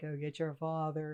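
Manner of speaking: deep, scary, crazy, spooky voice. Retelling a voice in a doorway at night: imitating a crazy, deep, scary voice. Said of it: "in that crazy, like, deep, scary voice".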